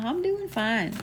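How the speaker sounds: hushed, sweet, soft, high slight southern twang. Quoting a sweet lady they talked with; imitating slight southern twang. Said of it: "it's kind of got a little bit of a southern twang to it".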